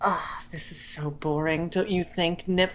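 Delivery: hushed, mumbled mutter under the breath. A player voices Nymph speaking to herself by the fire; muttered under breath. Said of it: "gonna just like kind of under her breath".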